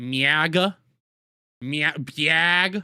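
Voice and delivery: clumsy put-on Wisconsin accent, "biag" drawn out. Trying to say a word the way someone else does: attempted Wisconsin accent. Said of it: "I don't have his Wisconsin accent".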